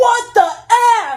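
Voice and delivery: sudden, very high, loud shrill outcry. Retelling a roller coaster ride where a friend shouts out: imitating a friend shouting. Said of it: "my friend shouts out".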